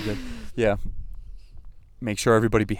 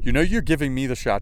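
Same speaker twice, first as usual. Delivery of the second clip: normal talking voice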